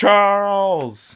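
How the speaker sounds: screaming, yelled impression. Imitating a man in a movie yelling charles, yelled charles impression. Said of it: "I'm gonna suck at voice impressions".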